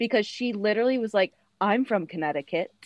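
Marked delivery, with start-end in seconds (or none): 1.6-2.7 put-on plain American voice with no British accent. Retelling a reality show moment, imitating Dorit without her fake British accent. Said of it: "Not in her, like, fake British accent".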